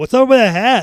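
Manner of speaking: high, loud, mocking, taunting tone.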